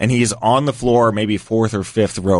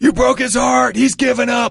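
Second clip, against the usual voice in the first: put-on very high, raspy, rough taunting yell. Retelling what a man yelled during the second round of a fight, retelling a yell. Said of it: "he yells".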